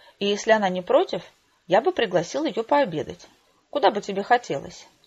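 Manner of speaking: ordinary delivery, nothing marked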